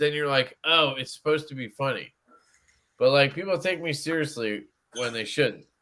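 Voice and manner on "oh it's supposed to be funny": ordinary delivery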